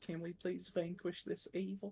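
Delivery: quiet, soft, high-pitched half-whisper. Playing a character who asks a companion to fight evil: half-whispering in character. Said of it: "kinda whispers to Harlan".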